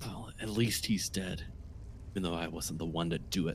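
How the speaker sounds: muttering under breath. A game master voices a character reacting to a killing, muttering under her breath. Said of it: "mutters under her breath".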